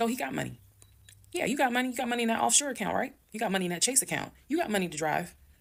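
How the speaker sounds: play-acted high yelling. Recounting an aunt offering him money, she retells her own yelling. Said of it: "I'm yelling in the background".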